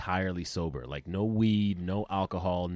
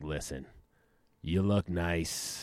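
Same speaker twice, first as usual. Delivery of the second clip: put-on raspy voice of an older woman; 3 dB quieter than usual. Acting out an older woman propositioning: raspy put-on voice of an older woman. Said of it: "That's the raspy voice".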